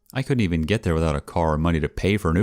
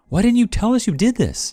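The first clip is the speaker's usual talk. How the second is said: high, loud, frantic outburst blurted out. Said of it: "her parents flipping out".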